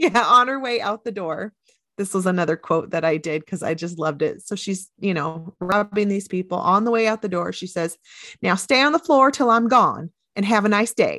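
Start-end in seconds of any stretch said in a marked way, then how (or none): 8.4-11.2 put-on Southern accent. Retelling a robber's parting words to people on the floor, in a Southern accent. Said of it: "she's got like this kind of Southern accent".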